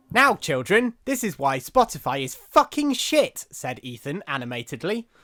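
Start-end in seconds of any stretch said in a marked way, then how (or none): 0.1-3.4 put-on shrill, booming, very high, swooping kids' presenter voice. Urged on by the other speaker, addressing children: children's TV presenter voice. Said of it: "You sound like a children's T V presenter there".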